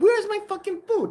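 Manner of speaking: furious, very high-pitched angry voice. Retelling a diner's complaint to a waitress, imitating Mike angrily demanding. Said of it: "Mike, calm down".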